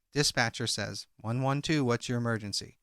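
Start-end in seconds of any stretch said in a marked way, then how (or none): none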